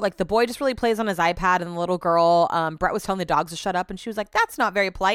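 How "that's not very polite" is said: put-on cute English accent. Retelling what the little girl said to Brett: cute English accent. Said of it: "in a cute English accent".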